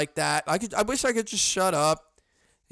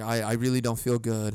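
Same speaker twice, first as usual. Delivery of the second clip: acted stutter, lower and slower; 5 semitones lower than usual. Retelling getting tunnel vision and telling everyone, reenacting own stuttering. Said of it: "And I start stuttering".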